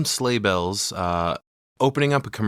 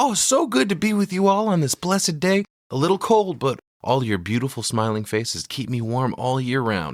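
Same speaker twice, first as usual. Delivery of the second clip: fake, hammy, over-the-top jovial cheer, pitched high; 5 semitones higher than usual. Recapping the character's speech on stage: over-the-top high-pitched jovial voice. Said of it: "He runs up on stage and he's like".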